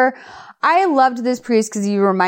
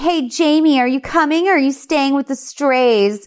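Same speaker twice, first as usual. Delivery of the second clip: mock taunting, called-out yelling voice; 5 semitones higher than usual. Retelling a scene where a character calls to another: imitating a character yelling. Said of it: "Stacy yells".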